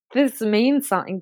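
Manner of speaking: ordinary delivery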